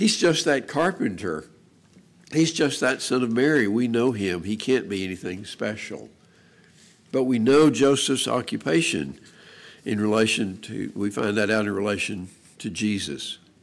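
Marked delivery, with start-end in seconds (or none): none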